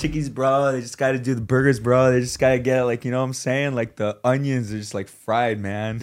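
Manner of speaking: put-on stoned voice. Teasing a co-speaker for sounding high, imitating him in a mock stoned voice. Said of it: "you sound so high. You're like".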